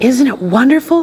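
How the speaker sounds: whispering. Asking Grandpa about the taste of the grass, whispered. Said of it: "whispered Charlie".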